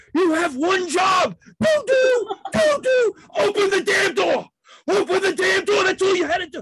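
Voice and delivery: acted-out, very high, lost-it screaming rant. Retelling losing it on a train when the door wasn't opened: reenacted screaming. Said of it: "I start screaming".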